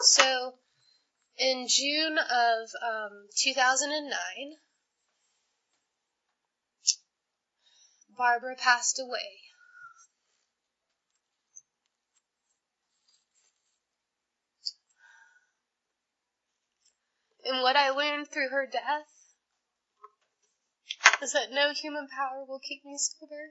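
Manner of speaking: on the verge of tears. Telling about someone's death and staying sober; about to cry. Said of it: "I'm going to cry again".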